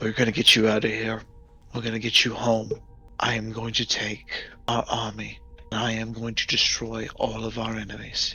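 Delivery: quiet, earnest, heartfelt sincere delivery. A captain looks at her and answers her question: sincere. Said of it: "How are we gonna get out of here, Captain? / So he looks at her with all sincereness".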